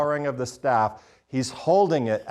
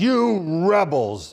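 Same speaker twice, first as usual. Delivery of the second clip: rising anger, pitched up; 5 semitones higher, 4 dB louder than usual. Acting out Moses' words to the rebels: acting out Moses' anger. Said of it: "is Moses' anger".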